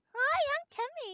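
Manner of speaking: very high, loud, belted cute voice. Taking turns voicing characters, introduce yourself in a high Timmy voice. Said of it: "Timmy has high voice".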